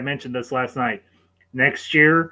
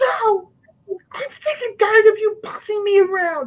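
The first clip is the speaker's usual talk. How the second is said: very high, cracking voice. Retelling a line from the movie: imitating Number Two's voice breaking. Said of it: "And his voice breaks".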